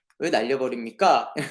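North Korean accent and speaking style. Playing a subordinate questioning Kim Yo-jong: North Korean accent. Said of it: "북한 말투로".

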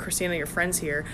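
normal talking voice

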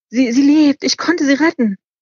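laughing through tears. He tells the old man that he saved her, laughing through tears. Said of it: "lachte er mit tränenden Augen".

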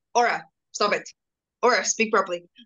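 ordinary talk, nothing marked

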